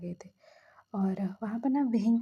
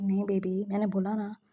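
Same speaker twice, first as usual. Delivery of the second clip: ordinary talk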